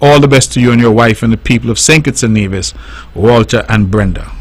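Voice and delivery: normal talking voice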